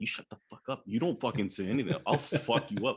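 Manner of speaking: furious, angry, whispered threats and cursing. Acting out cursing at a character during a dinner scene: acting out angry whispered cursing. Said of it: "I would be whispering that shit".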